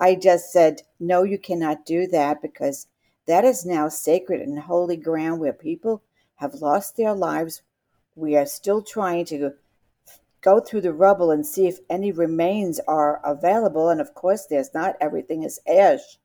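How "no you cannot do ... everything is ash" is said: usual speaking voice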